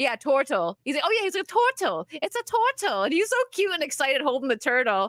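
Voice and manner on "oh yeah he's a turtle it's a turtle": put-on Italian accent, high, swooping, bright lilt. Retelling what a man said while holding a turtle, put-on Italian accent. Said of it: "he said it with an Italian accent".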